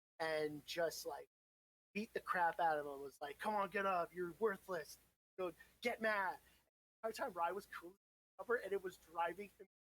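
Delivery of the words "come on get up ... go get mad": ordinary talk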